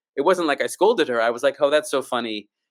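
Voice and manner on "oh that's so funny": usual speaking voice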